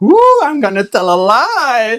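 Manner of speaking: acted giddy, excited, sing-song, slow, "lie" drawn out. Retelling how someone planned to fib at the post office: imitating Cindy excited. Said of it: "She got all excited".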